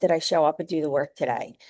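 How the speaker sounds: plain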